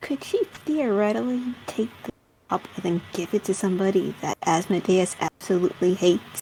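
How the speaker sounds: hushed, whispered aside. Voicing a character who asks a companion a sly question: whispering in character. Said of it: "Gil will whisper to Cole".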